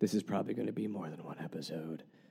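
low, very hushed smoker's voice. A host quotes their wife's words, sounding like a smoker. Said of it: "That makes my wife sound like she is a smoker".

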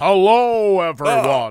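low, resonant voice pushed down into the chest. Trying out speaking voices with others, demonstrating chest voice. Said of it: "My voice is coming from my chest now".

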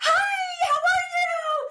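very high, very slow, overexcited cheerleader voice. Advising women about voice at work, the speaker demos a little-cheerleader voice. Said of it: "like it's a little cheerleader".

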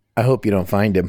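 snarky, snide tone. Retelling a child's line to a police detective in a film: imitating a snarky comment. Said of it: "makes the snarky comment".

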